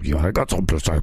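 low, throaty, tiny monster voice. Joking about a throat gurgle, voicing the little monster in it: little monster voice. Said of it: "like a little monster in my throat saying".

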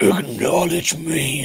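very loud, hard grumble. Imitating how Roman says his line: Roman Reigns low grumble. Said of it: "lowers his voice and grumbles".

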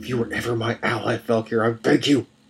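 hushed whisper. Narrating Jack's plea to Falkir near the cells, whispered. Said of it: "Jack whispered".

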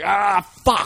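put-on very high, loud, furious cry of pain. Describing a drunk man kicking his cramped leg; imitating an angry scream. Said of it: "kicking his leg and screaming".

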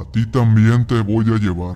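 grim, macabre voice. An unknown thing speaks to the wife, in a macabre voice. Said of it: "le decía con una voz macabra".

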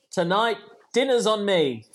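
normal talking voice

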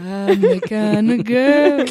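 put-on very deep voice. Podcast hosts joke before the intro, imitating Muna's deep voice. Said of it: "like Muna when she goes really deep".

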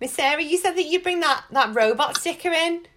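put-on very high-pitched little kid voice, about five years old. Retelling what Finn said when he was five: imitating Finn as a five-year-old. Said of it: "when he was five and he was like".

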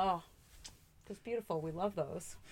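soft gushing tone dripping with sarcasm. Talking about people who help you to help themselves, very sarcastic. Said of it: "That was a very sarcastic chef's kiss".

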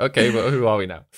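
ordinary delivery

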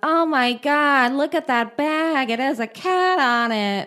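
high character voice, very slow, words stretched out. Retelling what a woman said in an antique store: Jennifer Coolidge character voice. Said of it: "The voice is Jennifer Coolidge character voice".

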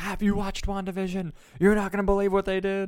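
excited high scream. Recalling calling the listener after watching a show, retelling excited screaming.

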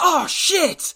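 sudden, very high-pitched, loud outburst. Retelling a referee's words heard on the ref mic: imitating a loud exclamation. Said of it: "really loud going".

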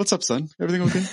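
calm, casual acted tone. Recapping a scene, retelling the old man's line very calmly. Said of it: "he says it very calmly as well".

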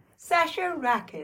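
unsettlingly bright, chipper, eerily upbeat voice. Asked to say only their own name for the bit, saying it cheery. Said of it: "I'll say my name cheerily".

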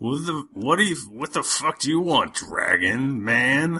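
put-on slurred tavern drunk voice. Voicing barbarians who stop and look at the player: drunk bar voice. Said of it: "my drunk bar voice".

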